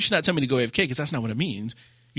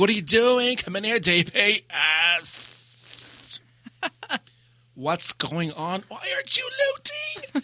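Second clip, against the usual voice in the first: high-strung, theatrical, high, swooping overdramatic voice; 6 semitones higher than usual. Describing a high-strung person, speaker acts out what they kept saying: mock-overdramatic voice. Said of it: "it was overdramatic like this the entire time".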